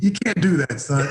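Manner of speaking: plain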